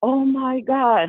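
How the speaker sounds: high, panicked screaming cry. Retelling how a woman screamed when a man confronted them; retelling her screaming. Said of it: "she's screaming like".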